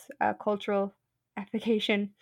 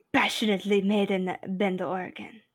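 put-on Spanish-accented voice. Repeating the label line: terrible Antonio Banderas impression. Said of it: "That was a terrible Antonio Banderas and impression".

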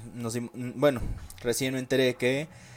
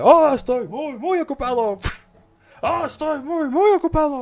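put-on pig voice, higher and louder; 9 dB louder than usual. Quoting the pig boss's most memorable line: imitating Retsuko's pig boss. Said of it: "con su frase más memorable".

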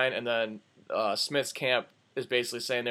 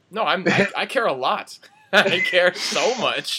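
loud, high sarcastic gushing. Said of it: "That was all sarcasm".

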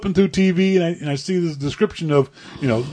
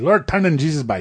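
broad Newfoundland dialect, exclaimed. Asked to show the accent, a speaker says the one phrase they know, in a Newfie accent. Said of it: "The only thing I can say in Newfie is".

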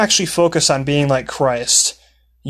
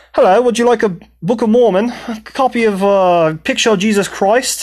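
playful fake British accent, pitched up; 7 semitones higher, 3 dB louder than usual. Retelling offering books to tourists as a joke: imitating his own put-on British accent. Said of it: "I changed my accent to a British accent".

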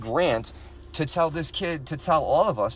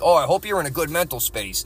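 mock-facetious, condescending tone. Acting out a man's reverse-psychology remark, mock-facetious and condescending. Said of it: "as being facetious about it and condescending".

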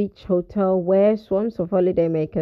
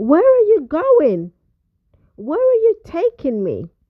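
really worried, very high cry; 10 semitones higher, 4 dB louder than usual. A woman in a car speeding onto the highway questions the driver, exclaiming worriedly. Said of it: "she exclaimed, really worried now".

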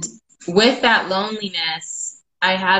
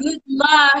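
put-on little kid voice, higher; 8 semitones higher than usual. Retelling nephews cheering over the phone: imitating kids' little voices. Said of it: "I start hearing their little voices".

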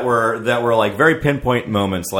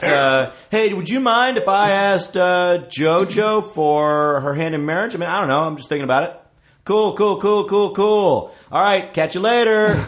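put-on very casual voice, higher; 8 semitones higher than usual. Retelling a phone call asking for permission to propose: imitating Jordan, super casual. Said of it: "the most casual conversation in the world".

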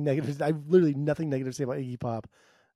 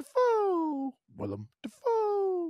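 put-on bird voice, much higher; 3 dB quieter than usual. Telling a joke about a frog and a bird talking, doing the bird's voice. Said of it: "And the bird goes".

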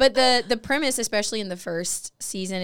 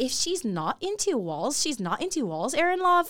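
put-on pitched-up voice with Derry Londonderry accent; 7 semitones higher than usual. Quoting Aunt Sarah from the show: Aunt Sarah voice with Londonderry accent. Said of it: "this is Aunt Sarah. She goes".

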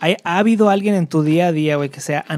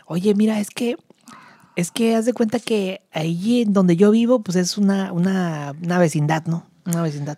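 put-on woman's voice; 3 semitones higher than usual. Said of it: "Con esa voz".

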